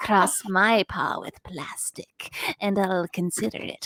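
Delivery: slow, breathy, drawn-out drawl. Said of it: "she kind of had an [name] voice going on".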